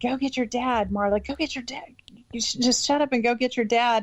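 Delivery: repeated words, half-yelled, mild yelling. Recalling her uncle yelling at her to go get her dad, imitating Uncle Dewey yelling. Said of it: "my Uncle Dewey was yelling at me".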